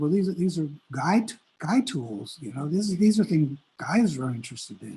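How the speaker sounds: plain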